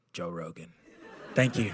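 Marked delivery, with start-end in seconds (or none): 0.1-0.7 whispering, lower and quieter. Retelling whispering back into the groom's ear: retelling a whisper. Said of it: "And I whisper back in his ear".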